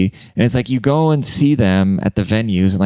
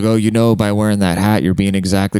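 plain

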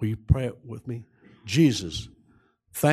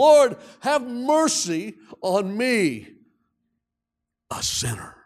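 put-on, very high, drawn-out crying out; 11 semitones higher, 3 dB louder than usual. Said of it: "I cried out to him".

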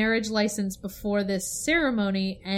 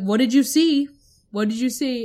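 mock insistent, pressing, loud, demanding delivery; 3 semitones higher, 6 dB louder than usual. Voicing a player's character confronting a fleeing man: demanding to know. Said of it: "and you demand to know".

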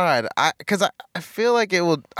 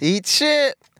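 happy, friendly, cheerful and bright, higher pitch; 8 semitones higher than usual. Trying out a stage sign-off after being told to say it happy: saying it happily. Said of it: "If you say it happy".

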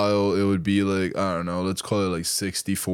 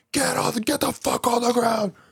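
mock very high, shouting yell. Retelling a cop getting out and yelling at them to get on the ground. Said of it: "just starts yelling at them".

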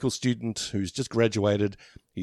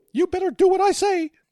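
high, loud squeaky cartoon voice; 6 dB louder than usual. Host joking about getting screwed over by the big mouse, in a Mickey Mouse voice. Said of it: "that was me doing Mickey Mouse".

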